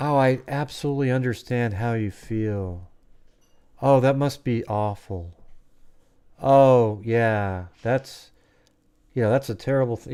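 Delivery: slow, insincere, fake-sympathetic customer-service voice. Retelling a call with customer service, imitating fake customer service sympathy. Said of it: "the customer service person goes".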